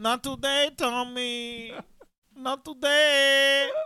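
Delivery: very high, loud put-on Spanish accent, "today" drawn out. Imitating Gisele scolding Tom Brady: imitating Gisele in a put-on accent. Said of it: "I don't know why I just did that".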